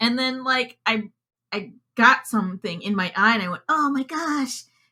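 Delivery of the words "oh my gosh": put-on tiny, high, small little-kid voice. Retelling getting something in the eye as a child, in a tiny child voice. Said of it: "in my tiny child voice".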